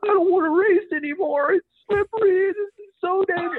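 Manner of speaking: very high, scared, tearful crying whimper, put-on. Retelling what Chad said while getting up during a rainy race, imitating Chad crying. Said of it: "And he was crying".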